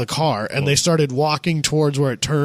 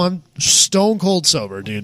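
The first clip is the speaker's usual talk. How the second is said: usual speaking voice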